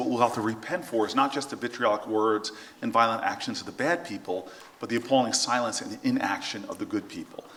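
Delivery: ordinary talk, nothing marked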